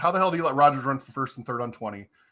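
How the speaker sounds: ordinary talk, nothing marked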